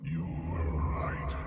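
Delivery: very quiet, faint whisper. A narrator voices a voice heard by a player's character, whispering. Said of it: "you hear a voice almost like whisper in your ear".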